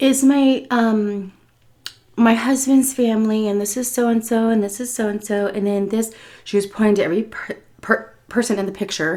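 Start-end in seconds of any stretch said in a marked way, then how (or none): 0.0-6.1 acted, really sweet, honeyed little voice. Retelling how a woman showed him her husband's family photos, imitating her really sweet voice. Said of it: "like really, really sweet".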